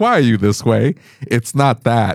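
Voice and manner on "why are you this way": normal talking voice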